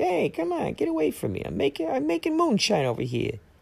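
very high, creaky, rough fifties wise guy voice. Describing a rat who makes moonshine: Jimmy Two Teeth 1950s prohibition guy voice. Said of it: ""Hey, prohibition" kind of guy".

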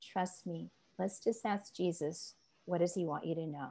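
gentle, soft, calm, reassuring voice.

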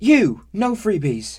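very high, very loud shrieking yell. Narrator voicing a woman swatting a dwarf's outstretched arm with a broom, shouted. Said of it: "she shouted".

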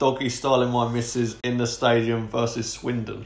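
ordinary talk

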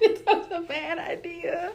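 high, slow laughing through tears.

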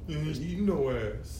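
slow, mocking imitation voice.

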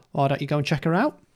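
ordinary talk, nothing marked

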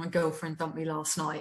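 put-on mumbling. Retelling what he said while looking down at the floor: imitating someone mumbling. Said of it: "he mumbled".

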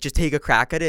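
normal talking voice

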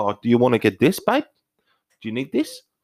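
casual, swooping put-on South African accent. Retelling shopping at Tesco in an accent a friend requested: South African accent. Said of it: "talk in South African accent".

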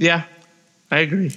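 voice breaking, catching and snapping mid-line. Discussing an upcoming wrestling match, agreeing with the other speaker, voice cracking. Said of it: "did you hear my voice crack".

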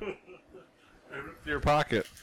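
words pushed through laughter, very slow and drawn-out. Retelling a prank during a match, imitating Hogan laughing. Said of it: "laughing at me".

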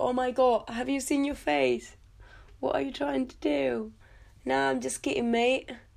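put-on very thick, laid-on British accent. Retelling a man's joke from a scene, the speaker uses a very thick british accent. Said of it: "with a very thick ass British accent".

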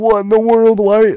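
put-on, very high, yelled outburst. Retelling a dad yelling at a basketball game on TV: imitating dad yelling. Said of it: "I can hear my dad just, like, y-, like, yelling".

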